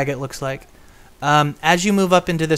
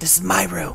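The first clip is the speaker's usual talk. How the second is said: disembodied inner voice from nowhere; 2 semitones higher, 5 dB quieter than usual. Voicing a voice the players hear in their heads: voice heard in your head. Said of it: "these must be the voices".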